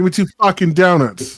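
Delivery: put-on New York mobster accent. Trying out a Rhode Island accent, slipping into a New York mobster accent. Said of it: "that was too New York mobster".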